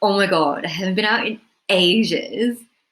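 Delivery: thrilled, lively, bursting-out excited delight. Showing the same phrase said from a different emotion: excited. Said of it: "someone excitedly saying".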